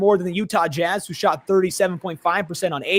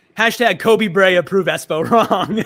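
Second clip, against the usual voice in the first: ordinary delivery, nothing marked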